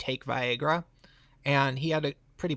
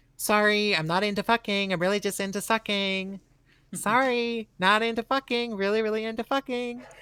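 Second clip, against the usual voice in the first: campy put-on queeny voice, much higher; 6 semitones higher than usual. Telling a story, the speaker quotes the guy they were talking to: queeny San Francisco voice. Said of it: "That was not the voice I expected".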